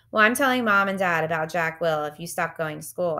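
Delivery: plain reading voice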